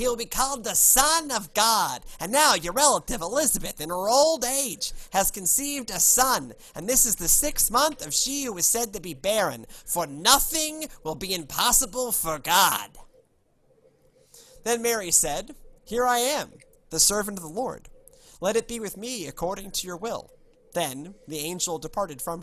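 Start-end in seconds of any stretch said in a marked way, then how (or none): 0.0-20.3 loud, high, thick New York accent. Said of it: "not in my New York accent".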